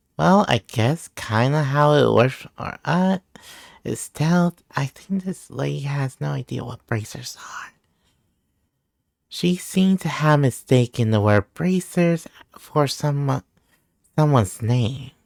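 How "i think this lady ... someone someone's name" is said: hushed, whispered voice. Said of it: "are you whispering?".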